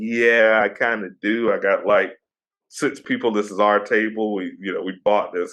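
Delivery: ordinary talk, nothing marked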